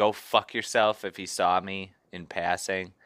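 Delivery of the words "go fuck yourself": put-on screaming. Recounting what a volatile man screamed at you in passing; retelling a scream. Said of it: "He was screaming".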